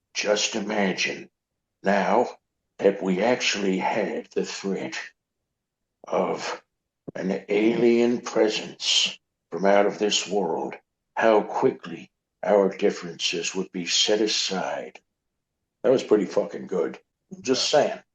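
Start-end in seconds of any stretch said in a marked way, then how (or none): 0.1-15.0 dark, slow, doom-laden, ominous voice. Quoting a man talking about an alien threat, imitating his ominous voice. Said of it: "I'll do it in his voice".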